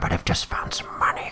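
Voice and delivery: hushed, quiet voice kept down. In a tabletop game, a character tells their lord about a find, hushed voice. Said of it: "I better keep my voice down".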